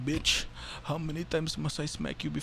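pimp-styled vampire count character voice. Retelling a comedian's bit where the count is a pimp, vampire count as a pimp. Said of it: "if the count was a pimp".

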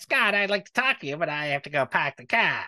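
put-on Boston accent. Speaker imagines a person's lines in the wrong accent: Tucky impression, Boston accent. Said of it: "Could you imagine a Tucky impression with the".

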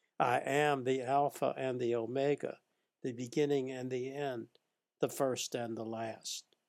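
ordinary talk

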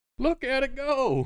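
panicked voice. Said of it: "The one says".

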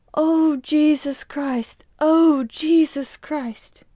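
very slow, high, anguished cry of pain. A narrator reads a man writhing until he can endure no longer: calling out in pain. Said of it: "but knowing him to be quick and resolute, / He was a foreigner and violently tempered, / "Let me alone," / John, the Swede, / The man writhed under the pain until he could endure it no longer".

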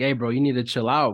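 normal talking voice

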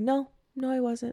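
put-on very confident tone. Speaker retells a woman denying she was there when confronted; mock-confident denial. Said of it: "like very confidently".

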